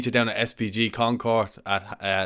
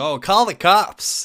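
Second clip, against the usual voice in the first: big, loud, drawn-out put-on American accent; 8 semitones higher, 5 dB louder than usual. Retelling how another man mocked someone in a video, in a big American voice. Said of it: "in a big American voice".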